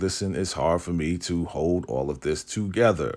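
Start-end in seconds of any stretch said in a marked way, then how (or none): none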